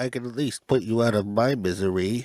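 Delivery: soft, hushed, droopy cartoon dog voice. Asked to do the quote in the cartoon dog voice: Droopy Dog voice. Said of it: "do the quote in the droopy dog voice".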